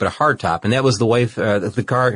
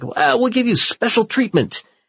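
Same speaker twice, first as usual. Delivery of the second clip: put-on heavy Italian accent, much higher; 12 semitones higher than usual. Retelling an Italian guy speaking to a man about his car: heavy Italian accent. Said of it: "with this heavy accent".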